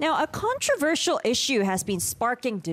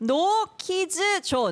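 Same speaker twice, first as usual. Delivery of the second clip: put-on Korean accent, pitched up; 8 semitones higher than usual. Asked to say a phrase in a Korean accent, the speaker demonstrates: Korean accent. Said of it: "Korean accent".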